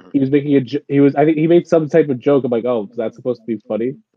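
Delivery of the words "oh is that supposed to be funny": mock casual, offhand, throwaway tone, slightly mad. Retelling own remark to a joking customer, imitating own casual remark. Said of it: "mad casually like that".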